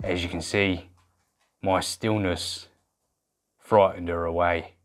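terrible, very low, soft put-on Australian accent. Presenting a comedy bit to viewers, in a terrible fake Australian accent. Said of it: "that terrible, terrible accent".

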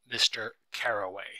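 ordinary delivery

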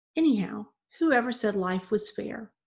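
ordinary delivery

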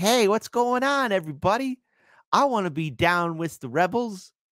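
smug know-it-all voice. Mocking how a corporate journalist would talk: mocking a smug journalist. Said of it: "know-it-all, smug journalist from corporate media".

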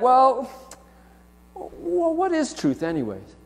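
scornful, taunting, swooping, mocking scoff. Explaining a passage, the speaker voices the retort he says we would make: mocking. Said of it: "he wants us to mockingly say".

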